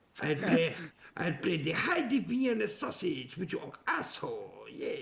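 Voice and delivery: bad, fake, put-on French accent. Making crude jokes to the others: bad fake French accent. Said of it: "instead of a French guy".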